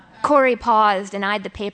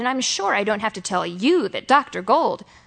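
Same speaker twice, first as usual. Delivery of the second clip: ordinary delivery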